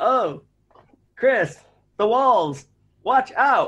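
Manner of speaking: deliberately bad, hammy, very high voice acting. Gamer mocking an old game's cheesy dialogue, doing bad Resident Evil voice acting. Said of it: "The best voice acting ever".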